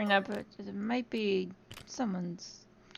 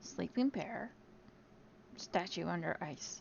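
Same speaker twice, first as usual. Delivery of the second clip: very quiet hushed whisper, barely voiced; 13 dB quieter than usual. Warning the group in character about a sleeping bear: whispering to the group. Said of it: "whisper to the group".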